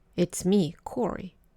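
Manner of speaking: ordinary delivery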